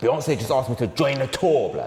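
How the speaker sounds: high, furious, angry outburst. Saying the same line in an assigned emotion for a game, angry.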